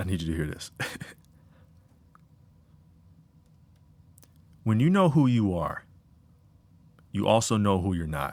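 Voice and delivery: deep, slowed-down voice. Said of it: "You see how my voice got deeper?".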